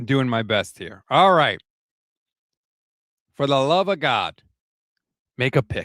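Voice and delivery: fading, failing voice giving out. Speaker waiting on a draft pick apologizes as the voice fades: fading voice. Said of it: "Sorry, voice again, fading".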